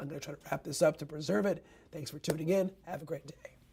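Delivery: strained, failing voice. Wrapping up a weather forecast live stream: voice giving out. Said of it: "My voice is giving out".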